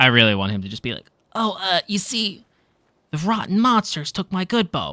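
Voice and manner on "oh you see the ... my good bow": high, slow, unhurried cheap knockoff anime hero voice. Game master trying out a voice for the bow napper, Walmart Naruto voice. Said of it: "Walmart Naruto voice".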